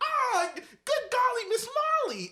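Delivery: put-on very high, loud, swooping toddler voice. Podcast host shows how a three-year-old sounded: imitating 3-year-old Reese. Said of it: "Voice was high".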